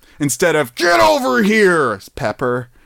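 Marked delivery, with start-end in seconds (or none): 0.8-2.0 high-pitched, stretched-out, mock battle-cry shout. Acting out a silly everyday request: shouting like Scorpion. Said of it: "have to shout, "Get over here," like Scorpion".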